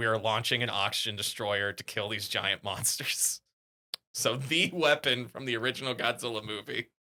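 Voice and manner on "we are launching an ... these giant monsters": ordinary talk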